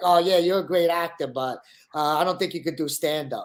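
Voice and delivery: acted, mock-sarcastic tone. Retelling what a man said to the speaker, imitating his sarcastic tone. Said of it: "Like in like a sarcastic way".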